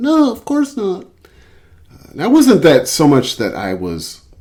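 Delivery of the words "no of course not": timid, mousy little squeak, pitched way up. Recalling being asked a question, the speaker re-enacts answering with a mousy squeak. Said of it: "sort of mousily squeak out".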